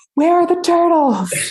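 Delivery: loud, high-pitched screaming.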